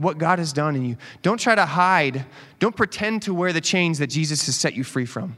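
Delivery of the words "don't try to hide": slow, emphatic, weighted delivery with "try" stressed.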